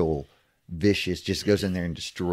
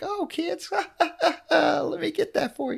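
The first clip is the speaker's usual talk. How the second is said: very high, sweetly dopey, goofy, nice voice. Imitating someone's puppet talk show persona: goofy nice Bray Wyatt voice. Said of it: "just as nice as he can be, as goofy".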